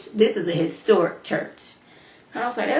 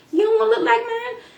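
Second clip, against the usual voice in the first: put-on little girl voice, higher pitch. Retelling what a little girl said, imitating Heavenly's voice. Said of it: "I'm doing Heavenly's voice".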